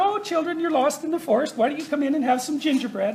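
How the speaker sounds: sweetly inviting, high, soft, all-nice voice. Retelling Hansel and Gretel, the speaker voices the woman acting all nice. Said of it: "she's all nice".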